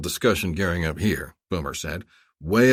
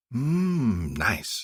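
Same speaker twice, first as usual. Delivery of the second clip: half-whispered, drawn-out long mmm; 3 semitones higher, 5 dB quieter than usual. Reading a senator leaning close to a captain: half-whispering. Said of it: "she whispered to him".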